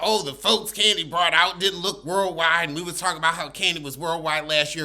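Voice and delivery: ordinary talk, nothing marked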